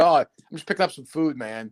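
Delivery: put-on laid-back, relaxed stoner voice. Retelling finding Steve lounging in pajamas: imitating Steve, laid-back stoner. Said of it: "Is he fucking Dazed and Confused?".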